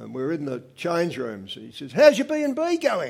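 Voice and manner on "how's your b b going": put-on South African accent, much higher and slower. Retelling a swimming friend's question in the change rooms, in his best South African accent. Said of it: "In his best South African accent".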